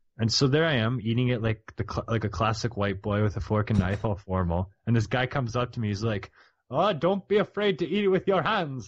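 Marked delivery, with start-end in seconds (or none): 6.7-8.9 bad, failed Jamaican accent, pitched high. Speaker quotes a guy who came up while he was eating; failed Jamaican accent. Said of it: "That's not a Jamaican accent, by the way".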